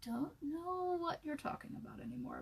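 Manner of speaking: mock whisper, high and soft.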